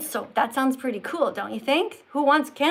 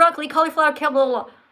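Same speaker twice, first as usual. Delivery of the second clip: rushed, run-together list, rattled off very fast; 4 dB louder than usual. Showing what a list sounds like said really fast. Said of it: "if you give a list and you say it really fast".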